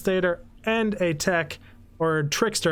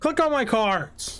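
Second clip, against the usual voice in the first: bossy, demanding, angry tone; 3 semitones higher than usual. Ending a video, telling viewers to click on the cards: demanding, angry. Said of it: "Said that in a demanding, angry voice".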